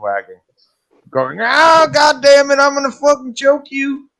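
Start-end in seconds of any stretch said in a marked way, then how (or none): 1.4-4.0 mock very high, shrill, loud enraged yelling. Act out the man riding next to the bus, shaking his fist, as a furious Jim Cornette impression. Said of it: "Jim Cornette is riding next to the bus, shaking his fist out the window".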